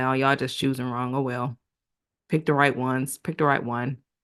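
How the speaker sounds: ordinary talk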